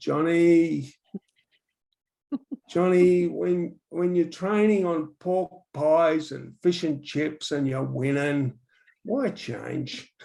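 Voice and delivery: very slow, unhurried, laconic drawl. Johnny retelling what Howard Hughes said to him, in Howard Hughes's slow, laconic voice. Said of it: "in his very slow, laconic voice".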